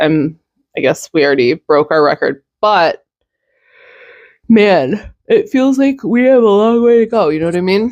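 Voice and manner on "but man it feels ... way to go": pitched-up speech through a yawn mid-sentence. Talking to viewers about the daily news run, yawning while talking. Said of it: "Sorry for yawning".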